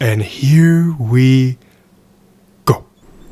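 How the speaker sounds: very slow, low, drawn-out delivery. Showing how the Joker says a line: Joker voice. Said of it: "reading that like the Joker".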